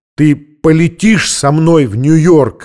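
near-shout, loud, slow and drawn out. A man asks a woman the same question once more: almost shouting. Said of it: "почти крикнул он".

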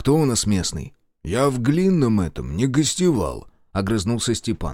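plain reading voice

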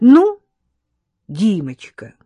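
sarcastic, needling, caustic, loud swooping tone. A woman starts talking to a man to needle another girl present, caustically. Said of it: "язвительно начала она".

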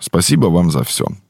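ordinary delivery, nothing marked

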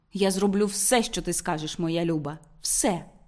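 plain

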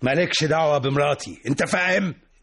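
snapping in anger. A man snaps back when asked if he's upset with his wife; angry. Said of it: "اهدى بس يا محمود".

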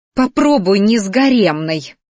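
words spat out in anger. Dionika answers Minarian's confession about the harem girls, spat out angrily. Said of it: "выплюнула Дионика, гневно сверкая глазами".

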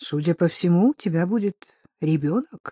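plain reading voice

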